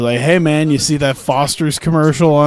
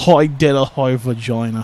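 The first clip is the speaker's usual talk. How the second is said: weird put-on Australian accent, slower; 2 semitones lower than usual. Commentating a game, slipping into a weird australian accent. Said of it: "some weird Australian accent that I just did".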